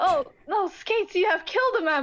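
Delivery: fake distraught, high-pitched. Explaining how the character Specs delivers the line, Specs sounding fake distraught. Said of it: "Specs is trying to sound distraught".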